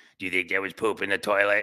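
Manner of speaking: put-on small, low, growling child voice. Retelling what their five-year-old asked them, little growly voice. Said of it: "She has like this little like, growly voice".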